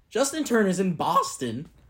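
voice cracking and breaking. Listing where your team's former players went, with a voice crack. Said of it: "Nice voice crack".

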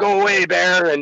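acted-out yell. Telling of a bear outside their door, re-enacting it: retelling yelling at a bear. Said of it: "I'm yelling at him".

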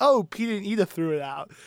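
sure, confident, matter-of-fact, self-assured tone. Retelling asking her mom what happened, imitating mom's confident tone. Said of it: "so confidently".

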